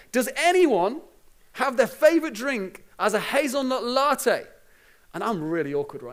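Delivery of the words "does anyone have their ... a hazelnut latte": slow, loud, drawn-out holler. Retelling a man in a busy town center shouting at the top of his voice, imitating his shout. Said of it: "he starts shouting, top of his voice".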